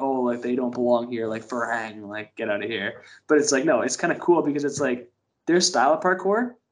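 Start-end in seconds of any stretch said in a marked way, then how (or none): 1.5-3.0 put-on contemptuous tone, lower, quieter, slower. Explaining how the word is usually said, mimicking a demeaning tone. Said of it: "a demeaning tone".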